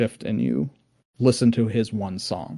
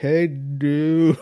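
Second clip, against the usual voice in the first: put-on slowed-down, muffled voice, higher; 5 semitones higher, 4 dB louder than usual. Describing a game scene, imitating the person at the register: slowed-down, muffled voice. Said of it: "slowed down and muffled and like".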